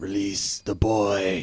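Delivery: menacing, scary villain voice. As the carriage stops, the masked figure addresses them in a scary voice. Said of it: "he says in his best scary voice".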